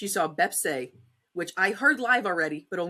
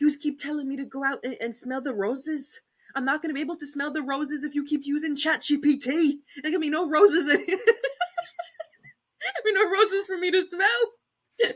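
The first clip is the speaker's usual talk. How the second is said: clumsy, bad put-on Scottish accent, pitched up; 9 semitones higher than usual. Quoting a funny Scottish girl, in an attempted Scottish accent. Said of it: "I can't do Scottish accent".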